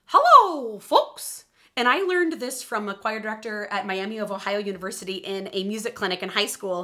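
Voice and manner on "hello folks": very loud, high-pitched cartoon mouse voice. Showing a quick ten-second vocal warm-up, in a Mickey Mouse voice. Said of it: "It's my Mickey Mouse voice".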